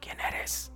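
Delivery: soft low voice. Retelling a question asked to a strange being: retelling a soft low question. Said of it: "Es así bajito".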